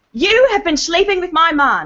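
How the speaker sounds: put-on, acted British accent. Speaker attempting a scene line as instructed, in a British accent. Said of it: "It's supposed to be with a British accent".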